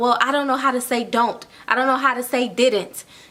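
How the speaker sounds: ordinary talk, nothing marked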